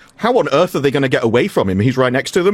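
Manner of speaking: normal talking voice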